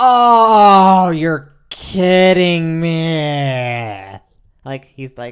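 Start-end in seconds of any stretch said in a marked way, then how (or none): 0.0-4.2 mock dismay, very loud, very slow, dramatic. Retelling how dad reacts when told there's only Pepsi: imitating dad's dramatic dismay. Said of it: "that was a bit dramatic".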